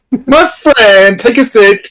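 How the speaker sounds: Italian accent slipping toward Greek. Welcoming a guest into a barber shop: attempted Italian barber accent gone Borat. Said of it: "I was attempting, like, an Italian barber, and it went Borat".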